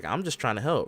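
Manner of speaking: normal voice, just talking straight. Retelling a wrestling segment, imitating Roxanne talking. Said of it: "Roxanne was like".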